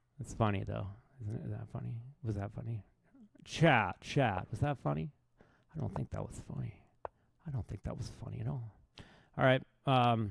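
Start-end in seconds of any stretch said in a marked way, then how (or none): 5.8-8.5 whispered with a breathy delivery. Asking chat whether a joke was funny: Bill Burr impression. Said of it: "my impersonation of Bill Burr".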